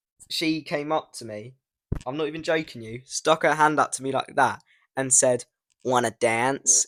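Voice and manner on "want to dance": put-on American accent, laid on thick, over the top. Retelling what a woman who came up to the speaker said, in the most american accent ever. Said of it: "in the most American accent ever".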